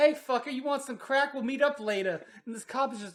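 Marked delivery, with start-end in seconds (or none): 0.0-2.2 put-on cocky, brash, loud, confident street-hawker voice. Retelling how a dealer offered crack to a cop: imitating a confident dealer. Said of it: "he just confidence".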